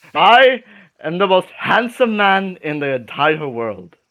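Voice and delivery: partly English accent, only halfway there. Showing another speaker how the character should sound, half English accent. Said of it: "give him like a um a half English accent".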